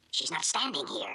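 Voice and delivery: secretive, hushed half-whisper under the breath. Answering a boss on the phone about a woman nearby: half-whispering. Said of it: "Then why are you whispering?".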